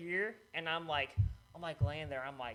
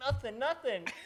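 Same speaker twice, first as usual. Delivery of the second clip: mock-casual tone hiding pain, much higher pitch; 9 semitones higher than usual. Retelling answering her mom after a head injury, acting out hiding pain. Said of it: "I'm like trying to hide it".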